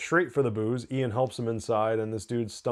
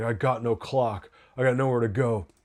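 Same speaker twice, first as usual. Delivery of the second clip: put-on drunk slur, slower. Recounting a bar scene, imitating Ian's drunk slurring. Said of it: "talking shit and and slurring".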